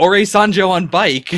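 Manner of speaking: put-on slow, drawn-out hollering yell. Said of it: "Momotaro's yelling".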